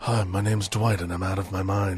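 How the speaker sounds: put-on low voice, plain straight American accent. Imitating a British actor in a movie, introduce yourself as Clive Owen trying a straight American accent. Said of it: "trying to do just like a straight American accent".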